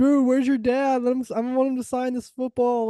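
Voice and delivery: acted screaming. Recalling fans at a football game heckling the quarterback, retelling a stadium scream. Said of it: "we were screaming at him like".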